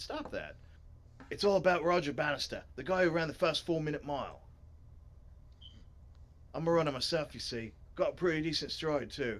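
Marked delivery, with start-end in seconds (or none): 1.3-9.4 put-on Australian accent. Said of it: "why am I making him Australian".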